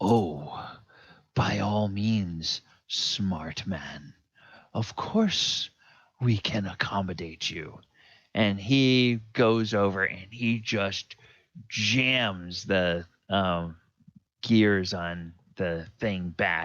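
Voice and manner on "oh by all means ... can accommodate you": half-dragon voice speaking with a chuckle. Voicing a half dragon answering a captured character: chuckling half dragon. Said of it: "the half dragon chuckles and says".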